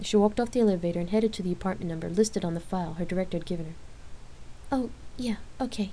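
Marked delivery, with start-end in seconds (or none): 4.7-5.9 soft, nervous stammering voice. Lark answers Rain as they step off the elevator, stammering nervously. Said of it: "Lark stammered nervously".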